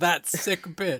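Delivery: abrupt, blurted-out words. Retelling how the game character Heisenberg suddenly talks: Heisenberg impression. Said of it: "he sounds like he's forced to".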